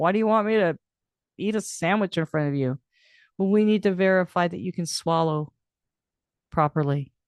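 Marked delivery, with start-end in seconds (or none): 0.0-2.8 put-on amused tone, laughing through the words. Retelling how Dad questioned the speech pathologist: imitating Dad laughing while talking. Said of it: "laughing, going".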